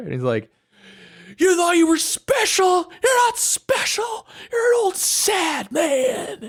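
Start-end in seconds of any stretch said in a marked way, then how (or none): 1.4-6.5 put-on, shrill, very high, drawn-out screaming rant. Retelling a screaming match in the hospital: imitating Jack screaming. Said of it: "screaming in the hospital".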